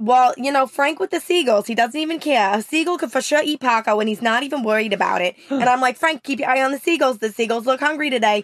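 put-on Long Island mom voice and accent. Talking with another speaker, the speaker does a Long Island mom accent. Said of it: "working on my Long Island mom".

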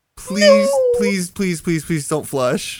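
mock begging, pleading tone. Retelling how a man begged them not to flush, imitating someone begging. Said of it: "He's just begging to me".

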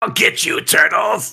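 high, rough, strained, loud rasping villain voice. Asked for an example, the speaker demonstrates a James Avery impression. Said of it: "Can we have an example?".

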